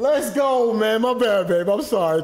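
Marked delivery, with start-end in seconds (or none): 0.0-1.0 overexcited, high-pitched, excited shout. Cheering during a game, then apologizing for being too excited: excited shout. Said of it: "Too excited".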